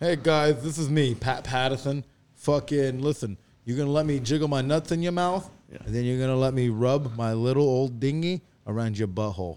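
loud New York tough-guy accent. Giving a best impression on request: Pat Patterson impression. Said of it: "let's give our best impression".

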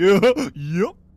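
silly cartoon-dog voice, belted out high and loud. Acting out a farm family at dinner, as Fred: sounds like Goofy. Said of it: "Why you sound like Goofy?".

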